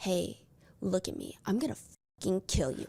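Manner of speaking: menacing, threatening voice. Showing how a character's line was not delivered: dark, sinister menacing tone. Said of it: "dark, sinister".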